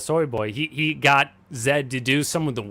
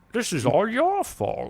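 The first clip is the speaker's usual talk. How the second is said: put-on Scottish accent, pitched much higher; 9 semitones higher than usual. Recounting a film where an actor slips into Connery, doing a Sean Connery impression. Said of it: "he starts actually doing Connery voice".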